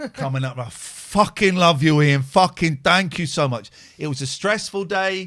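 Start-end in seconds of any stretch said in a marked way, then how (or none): 0.6-3.7 very loud, put-on northern English accent. Retelling drunk men coming up to thank him: northern English accent. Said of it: "That was my northern voice".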